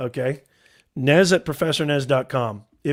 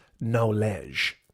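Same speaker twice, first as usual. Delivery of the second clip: knowledge in a French accent, low pitch; 5 semitones lower, 7 dB quieter than usual. Speaker jokingly repeats a word, French-style pronunciation. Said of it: "That's French for knowledge".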